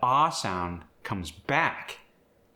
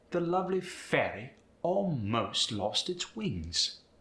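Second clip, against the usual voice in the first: put-on British accent; 4 semitones higher, 3 dB quieter than usual. Teaching pronunciation, the speaker reads an example sentence: British accent. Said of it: "using a British accent".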